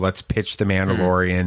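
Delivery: ordinary delivery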